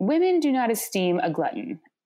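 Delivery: ordinary talk, nothing marked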